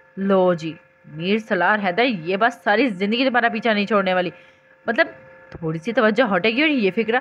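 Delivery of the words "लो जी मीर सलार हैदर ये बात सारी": plain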